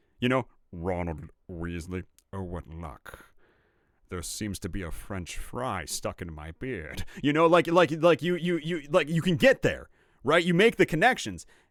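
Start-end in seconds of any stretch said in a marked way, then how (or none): 0.7-7.1 slow, measured drawl with British accent dropped. Showing how to get Orson Welles from a Snape impression: non-British Severus Snape impression. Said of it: "take a Snape impression and you make it not British".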